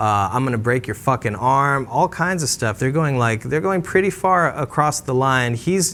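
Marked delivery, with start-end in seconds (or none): none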